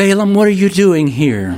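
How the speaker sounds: very high-pitched womanly voice. Imagining Balaam's donkey suddenly speaking to him, Balaam's donkey in woman's voice. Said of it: "in a woman's voice".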